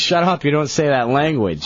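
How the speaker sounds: ordinary talk, nothing marked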